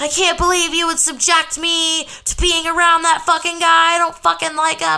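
put-on, high-pitched, furious, ranting, lost-it outburst. Retelling what a partner shouted in the car: imitating someone yelling. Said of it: "he was yelling at me in the car".

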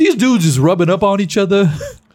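joking-serious, loud, high, big delivery. Retelling a show appearance: Charles Barkley impression. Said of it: "wonderful impression".

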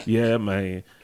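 acted low, depressed voice. Retelling a phone call from a friend: imitating Cody sounding depressed. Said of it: "he sounding all depressed".

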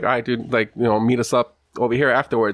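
ordinary talk

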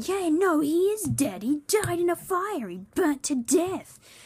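high, slow, mocking voice. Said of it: "Samuel started going".

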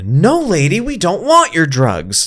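very high shout with pitch swinging widely. Retelling yelling again at a lady in the park: retelling a yell. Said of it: "so then I yelled again".

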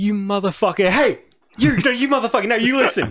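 very high, furious, self-interrupting angry yelling. Retelling a dad's road rage: imitating a dad's road rage yelling. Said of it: "you see he's yelling at someone".

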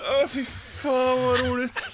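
speaking through laughter. Reacting while the other person views the pictures, laughing. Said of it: "Jag skrattar bara för att du skrattar nu".

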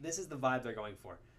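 ordinary talk, nothing marked

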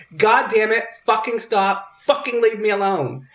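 high, had-enough, fed-up yelled outburst. Retelling what was yelled out while trying to sleep: retelling own yell. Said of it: "and I yelled out".

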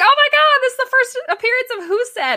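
high, fast, very excited gushing squeal. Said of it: "I was very excited".

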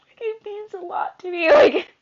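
high, loud, tearful outburst with sob. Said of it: "I'm gonna start crying again".

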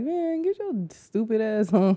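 put-on whisper. Describing guys who let you get close: imitating a whisper.

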